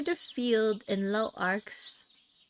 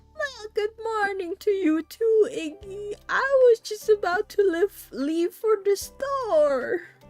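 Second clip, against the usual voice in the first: put-on old woman voice, very high and raised; 10 semitones higher, 7 dB louder than usual. Narrating a story, the speaker voices a woman greeting Iggy, in an old woman voice. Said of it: "I don't know how to do old woman voices".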